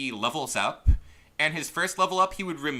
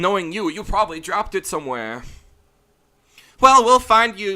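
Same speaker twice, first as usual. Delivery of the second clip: very loud, put-on girl character voice; 4 semitones higher, 9 dB louder than usual. Reading a game character's lines aloud: put-on girl voice. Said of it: "Girl voices are hard".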